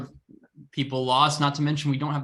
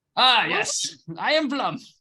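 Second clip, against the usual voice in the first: very high, swooping sing-song character voice; 10 semitones higher than usual. Trying out the voice of the character Plum: Plum's voice. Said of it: "That was the voice".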